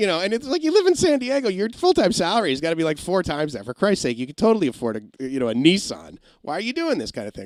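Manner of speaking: high-pitched, sarcastic, glib tone.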